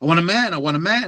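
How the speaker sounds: mock high-pitched yelling, repeated over and over. Telling a joke about pills in dinner, imitating someone yelling. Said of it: "she's yelling".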